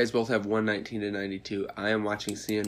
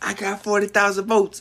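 scream, higher and louder; 11 semitones higher, 10 dB louder than usual. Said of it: "and he was screaming".

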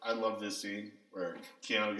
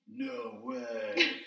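very high, creaky, squeaky exclamation; 14 semitones higher than usual. Retelling the son's reply in the movie: imitating Keanu Reeves. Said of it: "And Keanu Reeves is like".

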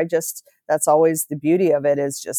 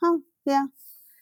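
mock no-big-deal indifferent tone, pitched up; 10 semitones higher, 3 dB quieter than usual. Retelling an Uber driver's answer to a remark about beautiful mountains: imitating an unimpressed reply. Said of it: "it was like, no big deal".

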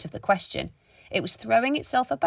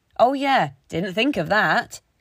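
dry, sarcastic mock realization; 4 dB louder than usual. Clara answers Miss Sisson's suggestion to take the sword out: sarcastic. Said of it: "Clara said sarcastically".

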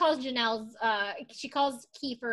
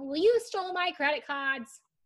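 raised, accusing yelling voice; 4 semitones higher than usual. Recounting how one woman yells at another, retelling the yell. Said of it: "Barbara yells about".

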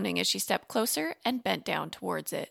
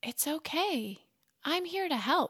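soft, gentle, quiet voice, pitched high; 7 semitones higher, 4 dB quieter than usual. Reading Maria speaking to a frightened merboy, softly. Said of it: "she said softly".

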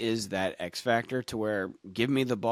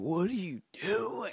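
very high, drawn-out screaming holler; 9 semitones higher, 5 dB quieter than usual. Retelling a head coach screaming at a player: imitating a screaming head coach. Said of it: "The head coach is just screaming at him".

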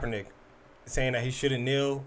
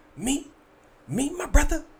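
put-on, high, preachy preacher-style delivery. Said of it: "he's doing a prayer thing".

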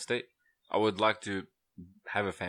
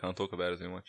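ordinary talk, nothing marked

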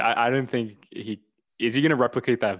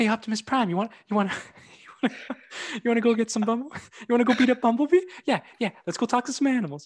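bad mocking impression, much higher pitched; 12 semitones higher than usual. Telling the other speaker about a YouTuber's parody bit, mocking high-pitched voice. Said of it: "he has this like high pitch".

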